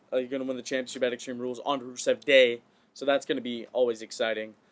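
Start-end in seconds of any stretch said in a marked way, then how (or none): none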